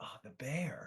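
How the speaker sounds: hushed, barely audible whisper under the breath. Recalling a classmate sitting next to them who whispered under his breath. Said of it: "he sort of whispered under his breath".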